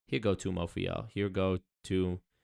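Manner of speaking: ordinary delivery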